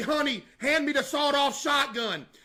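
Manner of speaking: acted-out, very loud mock voice. Acting out scaring off someone touching the tent, said real loud. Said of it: "I'd say real loud".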